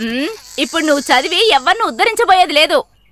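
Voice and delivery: plain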